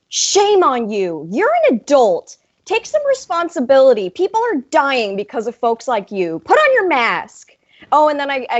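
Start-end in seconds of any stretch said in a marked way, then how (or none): 0.1-7.5 stern, scolding put-on motherly voice, swooping pitch. Retelling confronting a woman in a busy Target aisle, put-on mom voice. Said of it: "I like pull out my mom voice".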